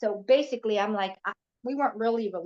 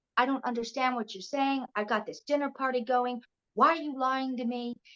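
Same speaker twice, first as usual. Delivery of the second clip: mock angry voice; 3 semitones higher than usual. Retelling her mother scolding her for lying about where she was: imitating an angry mother. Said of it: "She was really angry".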